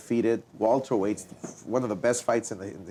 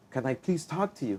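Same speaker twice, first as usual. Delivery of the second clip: tearful, pleading, crying voice; 3 semitones higher, 4 dB quieter than usual. Retelling how an opponent came in before the fight: imitating someone crying. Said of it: "he came in crying".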